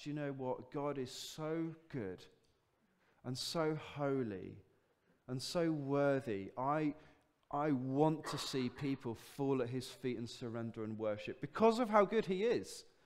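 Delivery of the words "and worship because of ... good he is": normal talking voice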